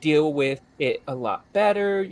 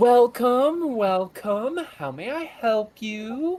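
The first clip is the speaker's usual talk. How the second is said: very high, lovely, unhurried lady voice; 9 semitones higher than usual. Voicing a lady at the counter greeting arriving players: voicing a lovely lady at a counter. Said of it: "a rather lovely lady, uh, standing at the counter. Um, she goes".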